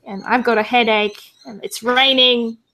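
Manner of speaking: normal talking voice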